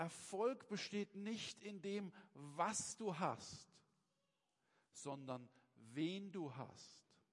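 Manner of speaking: very slow, deliberate, word-by-word emphasis. Stressing an important point about success: very slowly. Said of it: "ich sage das ganz langsam".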